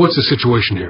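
ordinary delivery, nothing marked

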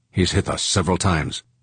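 ordinary delivery, nothing marked

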